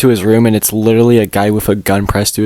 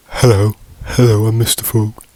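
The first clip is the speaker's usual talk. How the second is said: put-on cartoon character voice. Describing a character who says hello a lot: Mister Frog voice. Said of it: "He's like".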